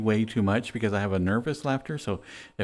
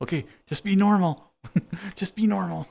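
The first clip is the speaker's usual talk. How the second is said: mock fighting back laughter, high, stifled giggles; 9 semitones higher than usual. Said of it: "trying not to laugh".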